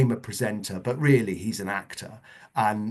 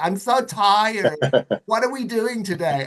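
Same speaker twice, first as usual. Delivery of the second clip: very high, loud, flamboyant camp American voice; 12 semitones higher, 5 dB louder than usual. Retelling how a man would greet the speaker each day, in a camp american voice. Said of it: "he just had this voice off pat".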